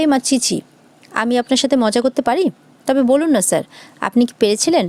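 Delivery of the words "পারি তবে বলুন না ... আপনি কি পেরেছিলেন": ordinary delivery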